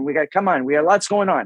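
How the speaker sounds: ordinary talk, nothing marked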